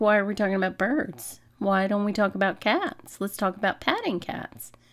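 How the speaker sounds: talking house cat voice. Speaking for the cat who wants to talk about cats: voicing Maddie the cat. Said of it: "She's like".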